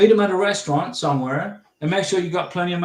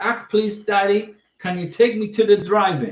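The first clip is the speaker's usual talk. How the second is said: close, accurate put-on South African accent; 3 semitones higher than usual. Showing how close the speaker got, doing a put-on south african accent. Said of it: "So my South African accent was pretty close".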